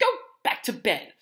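angry, seething, furious, high-pitched delivery. Ron orders Hermione to go back to bed, furious. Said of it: "said Ron furiously".

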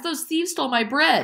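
breathless, gasping, very high-pitched voice. She appeals to the soldiers at the bake shop, gasping. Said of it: "she gasped".

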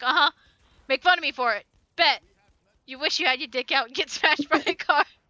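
dry, flat, low deadpan with no inflection. Imitating how someone would answer being mocked: imitating someone saying it flatly. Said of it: "he would say it, like, flatly".

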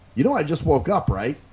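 plain

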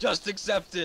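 high, loud, triumphant gloating cheer.

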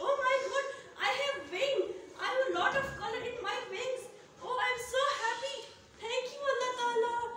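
delighted, joyful, high butterfly voice, exclaiming. Telling children a story, voicing the caterpillar that just became a butterfly: happy butterfly voice.

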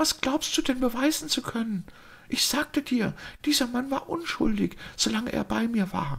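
hushed, soft and very high-pitched. Narrator reading the daughter's words to her father, in a quiet voice. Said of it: "sagte sie mit leiser Stimme".

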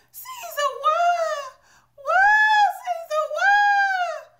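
mock very high, drawn-out wailing sob, what stretched. Describing a movie's end credits, imitating the lady crying: imitating a sobbing funeral cry. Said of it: "The lady is just crying".

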